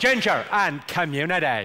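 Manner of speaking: Belfast-accented speech. Performer teaching the audience a practice phrase, in a Belfast accent. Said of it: "This is the phrase I use to get the Belfast accent right".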